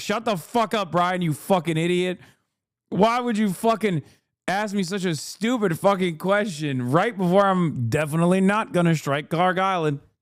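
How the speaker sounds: acted, mock-furious, angry ranting outburst. Retelling a man's reaction to a journalist's question, imitating an angry rant. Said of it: "And he got so mad".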